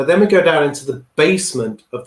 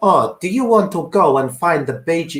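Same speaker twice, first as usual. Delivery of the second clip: bad, not-very-good Spanish accent; 4 semitones higher than usual. Retelling what two Spanish guys asked them in Beijing, in a bad Spanish accent. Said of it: "this is not a very good Spanish accent".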